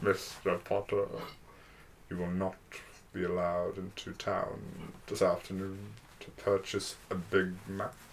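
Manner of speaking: hushed, breathy schoolmaster voice, near a whisper. Doing Professor Snape telling Harry Potter he can't go to town: Professor Snape voice. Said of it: "Just do Professor Snape telling Harry Potter".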